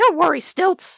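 high, sure, reassuring, confident barked words. Reading a story, a small dog reassures his friend before a bigger dog: barked confidently. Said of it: "Stretch barked".

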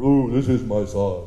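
deep, slow, booming voice. Retelling the baptism, when the clouds open and God speaks, in a big God voice. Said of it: "a big voice".

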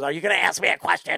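put-on ridiculous puppet-like voice. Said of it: "He's got the most unique, ridiculous voice".

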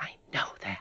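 soft, breathy whisper, barely voiced. Irene answering Gertie, who said that is not the way out, whispered. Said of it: "whispered Irene".

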